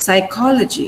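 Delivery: psychology, second syllable stressed. A teacher shows children where the stress falls, stressing psychology correctly. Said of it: "So this is where the stress mark is".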